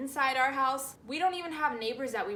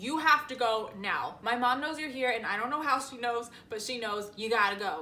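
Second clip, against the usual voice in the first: ordinary talk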